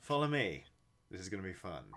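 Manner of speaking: upbeat, self-assured, smiling tone. Narrator voicing a woman who has regained her confidence, speaking to everyone with a grin. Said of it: "flashes everyone a grin".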